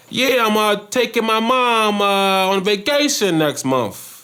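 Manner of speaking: put-on New York accent, very high, slow, drawn-out. Telling a joke about two coworkers from new york, in new york accent. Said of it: "New York accent".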